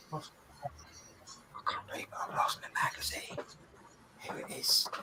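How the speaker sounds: hushed whisper under the breath, barely voiced. Searching for a misplaced magazine while assembling pieces: whispering. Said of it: "Why am I whispering?".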